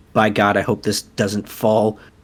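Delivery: quiet mutter under his breath. Voicing a character stepping onto a walkway: muttering under his breath. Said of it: "mutters some, like, draconic under his breath".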